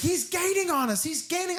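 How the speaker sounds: mock frantic, panicked shriek at very high pitch. Recounting two characters screaming at each other in a scene: retelling a scream. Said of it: "they're just screaming at each other".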